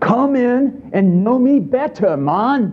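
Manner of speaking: put-on British accent, slightly high. Quoting a man surrounded by celebratory food: put-on British accent. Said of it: "I love what he says in his British accent".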